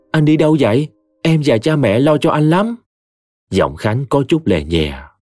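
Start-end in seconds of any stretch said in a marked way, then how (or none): 0.1-2.7 hurried, anxious, worried, much higher pitch. On the phone, a woman asks a man who went off where he is, hurried and worried. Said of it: "Ngọc vội lo lắng".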